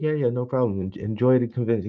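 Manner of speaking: put-on heavy, thick European accent, laid on. Retelling the Lego education CEO's goodbye line: thick European accent. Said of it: "He had this really thick European accent too".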